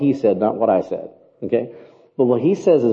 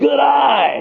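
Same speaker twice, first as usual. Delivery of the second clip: put-on very high crowd yell, "eye" drawn out; 12 semitones higher than usual. Retelling a baseball game crowd moment: imitating a crowd member yelling. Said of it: "someone yells".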